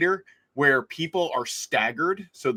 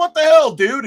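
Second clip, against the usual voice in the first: shrill, very loud, high-pitched shouted outburst; 13 semitones higher, 11 dB louder than usual. Retelling a man stopping dead in front on the escalator: imitating own yell. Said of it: "And I yelled at him".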